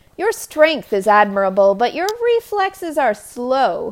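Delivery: loud, mocking, goading sing-song taunt. Mid-fight, she tries to goad the not-quite-wolf into a misstep: taunting. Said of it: "she taunted".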